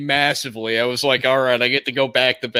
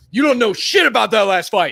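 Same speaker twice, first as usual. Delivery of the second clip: put-on sports pundit rant, higher and louder; 10 semitones higher, 4 dB louder than usual. Acting out hot takes as promised: Stephen A. Smith impression. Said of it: "I'm gonna be Stephen A. Smith".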